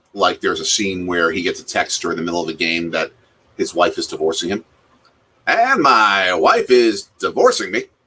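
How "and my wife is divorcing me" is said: very drawn-out, swooping, loud play-by-play sportscaster voice. Retelling a scene where a sportscaster learns of his divorce: Brockmire sportscaster voice. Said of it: "he sort of talks like that".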